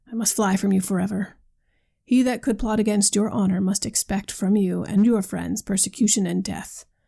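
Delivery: plain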